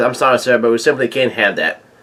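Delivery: normal talking voice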